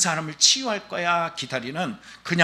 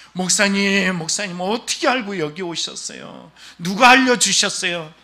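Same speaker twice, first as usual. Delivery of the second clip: play-acted sobbing, weepy, tearful crying voice; 4 semitones higher, 3 dB louder than usual. Retelling an elderly person's tearful greeting on a visit: imitating someone crying. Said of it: "갑자기 으앙 하고 우셔요".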